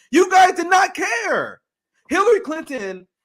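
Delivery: furious, all-out angry scream, high and loud. Ranting on a show about the former Secretary of State, screaming angrily. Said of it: "I'm literally screaming".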